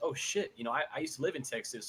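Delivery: ordinary delivery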